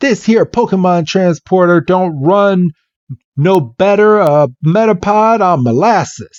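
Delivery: put-on southern country accent, pitched high. Retelling what a man said, in a put-on southern accent. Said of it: "he has a southern accent".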